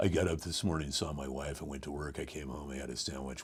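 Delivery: flat drone, very low and very soft. Describing how the announcing read later changed: very monotone. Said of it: "Then it went to that very monotone".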